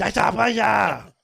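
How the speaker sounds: put-on very high, raspy, shrill screaming. Hearing a story about a massage place, imitating the lady who came screaming. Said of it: "she came screaming".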